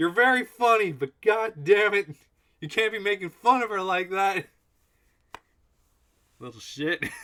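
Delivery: loud, very high, shrill, angry, furious yelling. Character scolds Minsk over Minsk's jokes, in a raised angry voice. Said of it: "I'm raising my voice".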